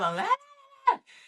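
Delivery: put-on very high, loud, defiant childish la-la yell.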